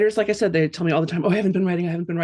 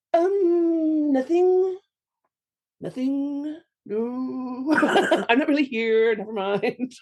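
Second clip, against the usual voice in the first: hesitant, timid little chimp voice, pitched up, very slow, drawn out; 8 semitones higher than usual. Acting out a younger chimp backing down from the big one: acting as a timid little chimp. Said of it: "That was my chimp".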